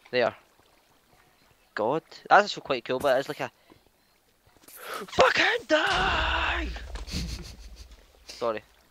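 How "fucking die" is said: high, drawn-out, overreacting rage scream. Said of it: "That was overreaction".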